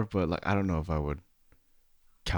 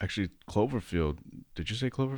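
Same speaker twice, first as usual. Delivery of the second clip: ordinary delivery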